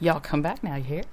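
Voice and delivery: twangy southern accent throughout. Asked to show how the other would say a phrase, doing it on the spot in a southern accent. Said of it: "In the southern accent".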